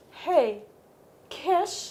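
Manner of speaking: gentle, hushed, really soft put-on charmer's voice. Retelling how Apollo asks for a kiss: Apollo's really soft voice. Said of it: "put on his really soft voice".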